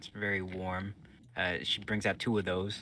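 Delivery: ordinary delivery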